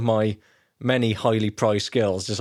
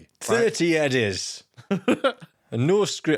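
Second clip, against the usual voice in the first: put-on Yorkshire accent, pitched up; 6 semitones higher than usual. A host acts out someone's demands for a band's show, in a mock Yorkshire accent. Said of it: "what is this accent?".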